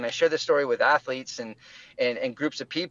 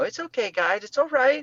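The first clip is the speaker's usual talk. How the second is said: high, soothing, calming puppy talk; 9 semitones higher than usual. Retelling calming two growling dogs: imitating own puppy talk. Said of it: "I went into my puppy talk".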